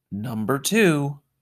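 muttering. William, lying in bed as the second car arrives: mumbling into the pillow. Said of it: "William mumbled into the pillow".

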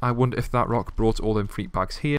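normal talking voice

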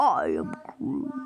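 very deep, dropped way down big man voice. Describing how something sounded, saying the line in a big man Groot voice. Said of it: "big man voice".

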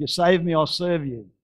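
full-throated yell at the top of the lungs. Retelling a rider's cry while hanging onto a runaway horse: imitating someone yelling at top of voice. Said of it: "he yelled out at the top of his voice".

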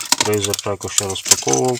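ordinary talk

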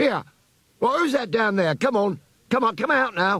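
high-pitched, very high, stern shout. Reading a story aloud, a character spots eyes below the platform and shouts sternly. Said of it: "but always returned to the grey mouse in front of him".

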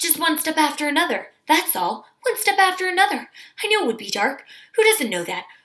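quick, faint, quavering, high, barely pausing. Narrator reads a man overheard as others approach him, fast, weak, trembly voice. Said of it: "He spoke very fast in a weak, trembly voice, hardly stopping for a breath".

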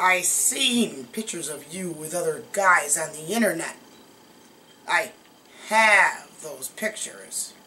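low, smug, drawn-out, play-acted self-satisfied tone. Retelling what a feared man said over the speaker's shoulder, imitating a smug remark. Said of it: "he very smugly said over my shoulder".

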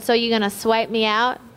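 ordinary talk, nothing marked

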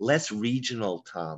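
courteous, polite, tactful, diplomatic tone. Recalling how others ask him to sound less regional, imitating polite feedback. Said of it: "They'll try and be polite".

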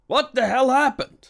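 very high, shrill, complaining outburst. Alborough, among dismayed officers after a mishap, complaining. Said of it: "Complained Alborough".

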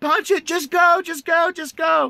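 very high, drawn-out scream through laughter. Retelling how a friend yelled to the driver: imitating Kevin laughing and screaming. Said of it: "Kevin is laughing, screaming".

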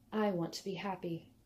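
hushed, barely audible. After a long silence she finally answers, quiet and barely audible. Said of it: "Her voice was quiet when she finally spoke".

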